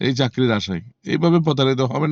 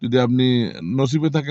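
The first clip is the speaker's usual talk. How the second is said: usual speaking voice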